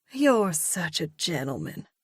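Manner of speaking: syrupy, sugar-coated, overly sweet tone. Narrator reads her reply after he places the bag at her feet: gooey, sweet voice. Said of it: "she says in a gooey, sweet voice".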